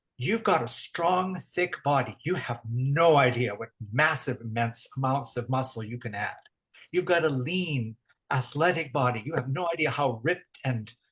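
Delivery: ordinary delivery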